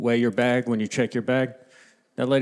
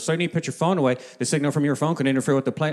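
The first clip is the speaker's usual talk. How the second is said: play-acted angry, firm voice; 3 semitones higher than usual. Retelling a flight attendant scolding about a phone: imitating an angry flight attendant. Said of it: "She got so mad".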